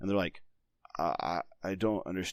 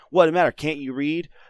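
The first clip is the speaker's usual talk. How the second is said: super sarcastic, very loud, high-pitched jab; 8 semitones higher, 9 dB louder than usual. Showing a question never asked to kids: imitating a sarcastic question. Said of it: "super sarcastic".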